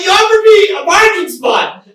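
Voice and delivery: high, loud indignant squeal. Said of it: "And I was like".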